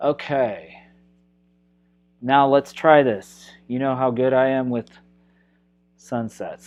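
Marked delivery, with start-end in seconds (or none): 3.7-6.7 fast, dry, wry, self-mocking sarcasm. Painting instructor starting a sunset jokes about their own skill; sarcastic. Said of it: "he says sarcastically".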